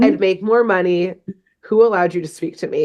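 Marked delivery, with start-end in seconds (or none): none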